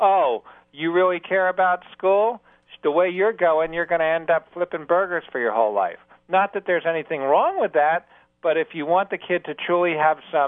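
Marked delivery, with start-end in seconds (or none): 0.0-6.0 acted, bitter, seething and scathing sarcasm. Showing how not to shame a kid about school, acting out seething sarcasm. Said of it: "shame them with seething sarcasm".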